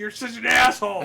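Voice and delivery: loud, high, furious angry yelling. Recalling the walk home, the speaker reenacts what he yelled, retelling a yell. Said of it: "I'm just yelling, yelling".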